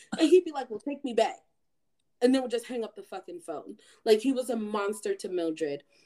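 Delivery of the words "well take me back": mocking, taunting, jeering tone. Retelling how a man phoned the mother about her kids: imitating a taunting tone. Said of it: "taunting her".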